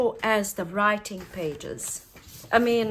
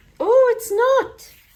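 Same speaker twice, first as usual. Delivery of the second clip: screechy squeak, very high and loud; 10 dB louder than usual. Speaker narrating a video, squeaky voice. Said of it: "Sorry about that squeak, squeaky voice".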